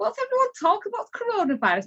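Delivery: mock, very high, swooping, half-laughing dismissive tone. Recalling the first conversations about coronavirus, retelling a laughing dismissal. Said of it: "sort of laughing, going".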